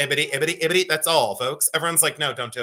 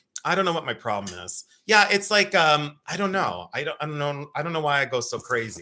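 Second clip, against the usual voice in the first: normal talking voice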